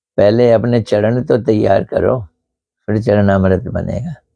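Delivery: ordinary talk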